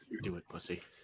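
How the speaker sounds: very quiet, close whisper in the ear. Voicing Chad whispering into another character's ear: Chad whispering. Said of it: "as Chad whispers in his other ear".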